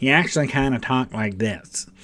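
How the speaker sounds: high, untough speaking voice with nothing gruff. Discussing a film portrayal, the speaker shows how Patton really talked: Patton impression, high voice. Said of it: "he had a kind of a high voice".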